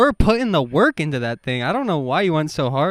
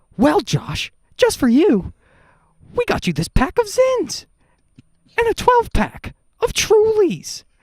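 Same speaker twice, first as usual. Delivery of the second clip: squeaky, very high, rushed, rattled-off interviewer voice. Answering a request to do Nardwuar interviewing someone: Nardwuar impression. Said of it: "can you do an impression of Nardwuar interviewing Josh Block".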